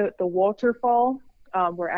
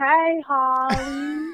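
put-on dazed, concussed-sounding speech, higher pitch; 6 semitones higher than usual. Retelling how a concussed Andrew talked after flipping: imitating concussed Andrew. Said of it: "Andrew would be talking like this".

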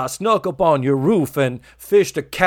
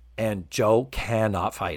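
usual speaking voice

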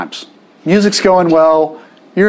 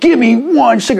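put-on hostile, high, angry shouted yell; 8 semitones higher than usual. Speaker retells a man demanding a single cigarette from a woman, imitating a man yelling. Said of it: "He's yelling at her".

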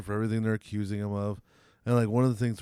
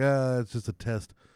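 put-on chuckling through the words. Retelling a documentary story, imitating someone laughing while talking. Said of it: "he would just laugh and be like".

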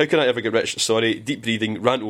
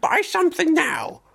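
high, swooping, drawn-out character voice. Imitating a game shopkeeper's voice clip: Ganon voice. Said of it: "that's your Ganon voice".

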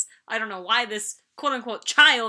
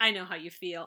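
mock-dry delivery, much quieter; 4 semitones lower, 6 dB quieter than usual. Speaker describes a woman answering a man who is yelling; retelling a dry reply.

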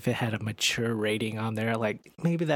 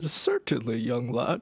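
put-on old storyteller voice. Asked to redo a Bane voice, the speaker slips into a Deckard Cain voice. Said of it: "that turned into Deckard Cain".

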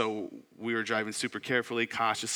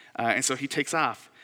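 normal talking voice

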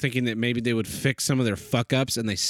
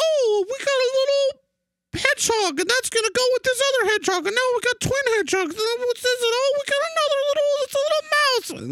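very high, silly, stupid toy-like voice. Retelling a toy-unboxing video someone watched, imitating a stupid voice. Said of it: "talking in a stupid voice".

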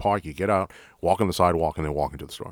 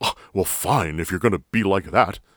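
mock-indignant huff, faster; 3 dB louder than usual. Describing a detained driver walking away from a traffic stop, imitating her indignant sulking. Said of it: "these the indignation".

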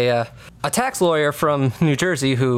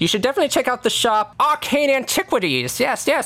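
put-on high, chatty, folksy old farmer voice; 8 semitones higher than usual. Voicing a farmer driving a horse-drawn hay carriage, in an old farmer voice. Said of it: "There's a old farmer man kind of, you know, driving this horse-drawn carriage, carrying some hay".

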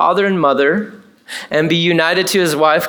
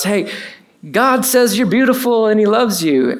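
mock hollering, raised half shout; 4 semitones higher than usual. Retelling a friend calling out to a woman at Walmart: imitating someone shouting. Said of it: "kinda shouts".

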